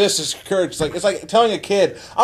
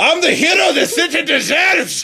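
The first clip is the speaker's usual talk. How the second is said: put-on Scottish accent, much higher pitch; 8 semitones higher than usual. Joking that Batman would not be the same Scottish; doing Scottish-accent Batman voice. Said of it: "Batman would not be the same with a Scottish accent".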